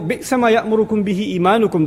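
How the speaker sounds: usual speaking voice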